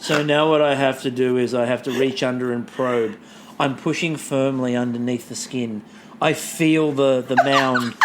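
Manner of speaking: low, flat, deadpan, matter-of-fact monotone drone. Retelling a recipe being read aloud, imitating Ben's matter-of-fact monotone. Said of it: "in that Ben sort of monotone, very matter-of-fact".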